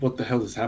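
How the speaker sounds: hushed mutter under the breath. Asked by the game master, a player gives his character Gar's line, muttering under his breath. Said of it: "Gar was just saying under his breath".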